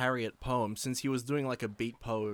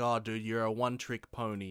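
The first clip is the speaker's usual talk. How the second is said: ordinary delivery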